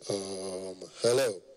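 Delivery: very low, deep, rich wealthy-man bass voice. Retelling a phone call from a rich man, imitating a rich man's deep voice. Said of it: "your voice must be deep".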